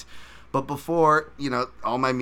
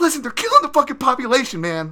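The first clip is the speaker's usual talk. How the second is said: very high, swooping, indignant, defensive outburst; 13 semitones higher, 7 dB louder than usual. Retelling how a man snapped back at Vince Vaughn's question: mock-defensive retelling. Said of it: "Saki gets all defensive".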